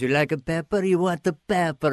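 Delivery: fake, put-on Italian accent. Retelling a comedy sketch, playing a fanatical Italian pepper guy, put-on Italian accent. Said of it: "We're these fanatical Italian pepper guys".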